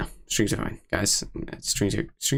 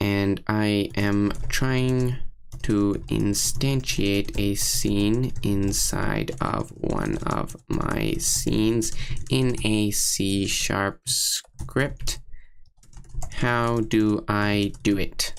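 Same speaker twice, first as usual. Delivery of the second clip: very slow, drawn-out put-on robot voice. Reading aloud a question typed to ChatGPT, in a put-on robot voice. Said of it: "I try to talk in a robot voice".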